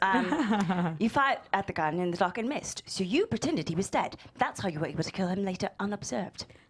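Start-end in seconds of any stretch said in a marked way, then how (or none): 1.0-6.5 put-on British accent, laid out. Working through a murder mystery with others, the speaker switches to a British accent. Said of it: "let me just do this in a British accent".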